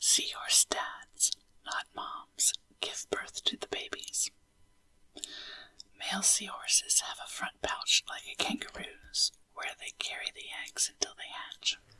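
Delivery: soft, hushed, quiet whisper. Reading facts to listeners drifting off to sleep: whisper voice. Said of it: "in a whisper voice as you drift off to sleep".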